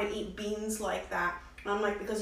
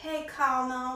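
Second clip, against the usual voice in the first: lazy, drawling southern accent; 3 semitones higher than usual. Explaining how a word's pronunciation evolved, southern drawl. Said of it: "like with this southern drawl".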